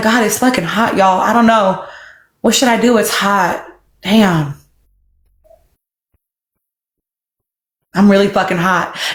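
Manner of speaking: low voice as a dog speaking. Acting out a dog sitting in a house, voicing a dog in a hot house. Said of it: "He's like the dog sitting in the house going".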